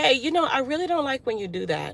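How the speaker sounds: gentle, easygoing, soft and nice-mannered voice. Retelling how the speaker once asked someone nicely: retelling in a soft voice. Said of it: "And I said it in my soft voice".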